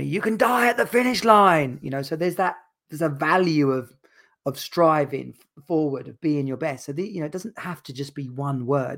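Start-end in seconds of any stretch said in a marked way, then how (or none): 0.0-1.8 high-pitched, loud screaming voice. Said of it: "would scream at me".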